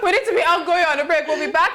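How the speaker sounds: high, laughing mock announcer voice.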